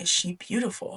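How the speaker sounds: hushed, very quiet whisper. Recapping a story, one character speaks into another's ear: quiet whisper. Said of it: "He whispers in his ear, all quiet".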